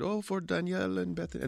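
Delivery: put-on Norwegian accent, pitched way up. Retelling what the Norwegians said when they handed over mittens, in a Norwegian accent. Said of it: "This is my Norwegian accent".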